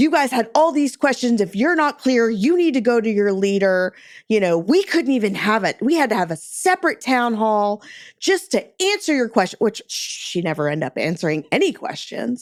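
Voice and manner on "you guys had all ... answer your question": raised, pitched-up, loud yelling. Retelling how a senior leader addressed a department town hall: imitating a leader yelling. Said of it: "literally just starts yelling".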